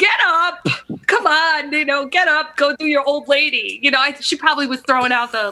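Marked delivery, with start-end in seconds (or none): 0.0-3.8 put-on Long Island accent. Retelling what she said to get someone up, imitating a Long Island old lady. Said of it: "the Long Island accent".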